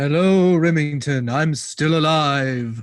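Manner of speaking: loud undead zombie vampire monster voice. Co-host greeting the host at the top of the show, zombie vampire ghost voice. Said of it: "sound like a zombie vampire ghost".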